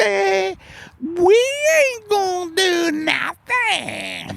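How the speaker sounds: put-on cranky old blues musician voice. Imagining nations talking about climate: cranky old blues musician voice. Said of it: "talk like an old, cranky, old, old blues mu-, musician".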